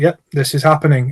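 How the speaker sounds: level, flat, robot-like monotone deadpan drone. Describing a robot character who talks monotone, doing his flat monotone robot voice. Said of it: "he's very just sort of monotone. So he, he speaks like that".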